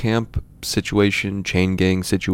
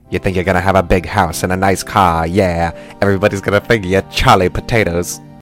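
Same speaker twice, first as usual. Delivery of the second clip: put-on dramatic, old-movie style line reading; 3 dB louder than usual. Retelling a movie scene, imitating Sidney Poitier. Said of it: "Sidney Poitier will be like".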